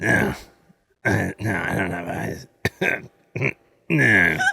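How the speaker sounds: clumsy bad monster growl, very low, rough and creaky. Retelling someone's attempt at a monster, the speaker does a bad little monster voice. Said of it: "tries to do his own little monster voice".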